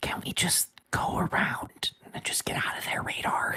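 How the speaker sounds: quiet whispered voice. Playing a character speaking over the comm to the crew: whispering into the comm. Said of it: "whispers into the comm".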